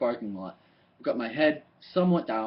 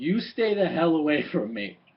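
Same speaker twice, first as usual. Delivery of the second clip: angry barked shout, held back and contained; 2 semitones higher than usual. Speaker retells what a lady they had never seen screamed at them, retelling a scream. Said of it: "she screams".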